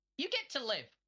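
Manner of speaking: really smiley, grinning voice. Retelling a line used on someone: imitating a really smiley voice. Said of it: "in a really smiley voice".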